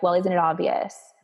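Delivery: ordinary talk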